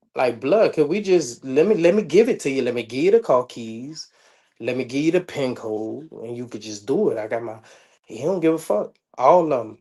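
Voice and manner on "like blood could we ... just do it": ordinary delivery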